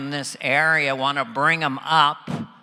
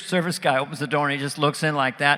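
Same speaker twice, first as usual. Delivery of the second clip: plain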